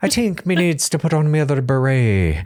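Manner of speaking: leprechaun-style Irish accent. Joking about putting on another beret, in a put-on Irish accent. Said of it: "That's how I get into the Irish accent".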